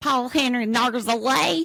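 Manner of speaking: hillbilly-style Southern accent. Asked to say a man's name, saying it in a southern hillbilly accent. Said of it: "Say his name in a southern hillbilly accent".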